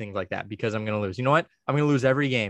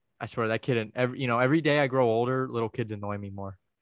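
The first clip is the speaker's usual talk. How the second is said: usual speaking voice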